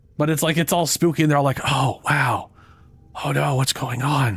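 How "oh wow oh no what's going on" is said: mock whisper, higher. Retelling how game characters talk during a quest: imitating characters whispering. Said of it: "Ortis and the Lotus straight up just start whispering".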